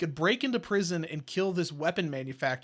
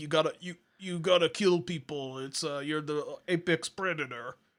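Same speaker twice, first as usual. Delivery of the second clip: put-on clumsy Russian accent, slowly. Recapping a movie's hunting-trip flashback where the father speaks, Russell Crowe's bad Russian accent. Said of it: "doing a really shitty Ru- uh, Russian accent".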